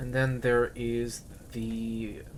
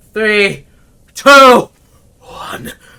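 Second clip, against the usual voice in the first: manic chuckling, very high and very loud; 10 semitones higher, 22 dB louder than usual. Describing Konk's death as he hugs the creature: Konk's maniacal chuckling countdown. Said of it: "he lets out a maniacal chuckle as he's counting down".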